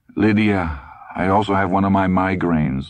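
plain reading voice

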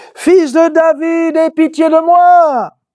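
high, slow cry at full volume. Reading the blind man's cry aloud, trying to shout louder: shouted very loudly. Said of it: "je vais essayer de crier beaucoup plus fort".

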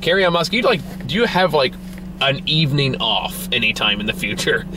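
plain

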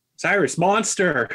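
shouting, calling out loudly. Playing a character clinging to a ship's mast: shouting a warning. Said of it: "he'd probably give out a shout for Cyrus".

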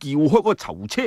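ordinary delivery

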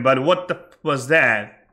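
normal talking voice

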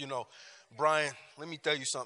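put-on fast Italian accent, male voice. Describing a short Italian man who speaks to Bryan, imitating an Italian man's accent. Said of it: "He talks like this".

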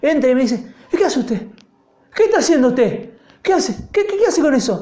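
high-pitched voice, repeating over and over. Retelling how his father came in and questioned him: imitating his father. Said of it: "Era mi papá".

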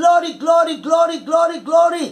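excited, bubbling, exultant repeated cries. Speaker praising god on the seventh day of fasting, shouting glory excitedly. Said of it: "I'm shouting glory because it's so exciting".

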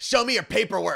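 mock yelling in a put-on old woman voice. Telling about a seat mix-up on a flight, retelling the grandma's yelling. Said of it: "the grandma started yelling at the passenger".

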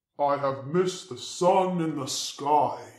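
big, loud, deep rumbling voice. Narrating a spirit shadow coming into the sun, rumbling, far too loud. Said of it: "he rumbled, far too loudly".

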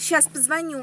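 put-on airs, affected, mannered voice. Retelling how a man talked in a shop: affected mannered voice. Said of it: "он вот так и говорит манерно".

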